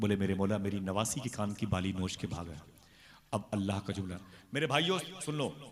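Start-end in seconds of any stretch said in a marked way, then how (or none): none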